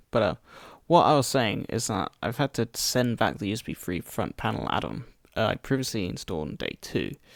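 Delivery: hoarse, croaky voice.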